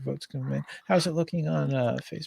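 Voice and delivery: very soft, barely audible half-whisper. Waiting for votes to come in, speaking into the microphone, half-whispering quietly. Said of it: "I'm just going to whisper kind of quietly".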